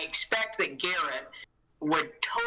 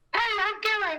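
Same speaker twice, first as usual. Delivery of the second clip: very high, thin, reedy, squeaky cartoon voice. Playing the part of the absent Garrett, introduce yourself in a Mickey Mouse voice. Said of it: "apparently I sound like Mickey Mouse".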